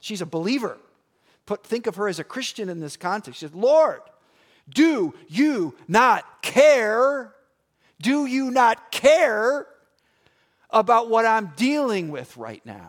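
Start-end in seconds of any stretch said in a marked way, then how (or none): 3.5-12.9 put-on exasperated shout, very loud and drawn out. Retelling a Bible story, a frustrated woman cries out to Jesus: imitating her frustrated yelling. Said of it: "She's yelling at the Lord Jesus Christ".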